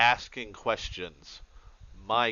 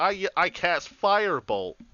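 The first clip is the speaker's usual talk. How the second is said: mock yell, much higher, louder; 10 semitones higher, 6 dB louder than usual. A game master retells how a player reacted when a piercer dropped: retelling a yell. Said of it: "immediately he just yells".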